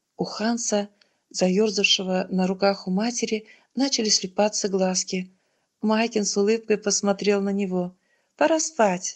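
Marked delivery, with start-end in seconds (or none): 8.4-9.2 merry, lively, bright, high cheerful exclamation. A woman to sleepy little Hans in his mother's arms, cheerfully exclaimed. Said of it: "весело воскликнула она".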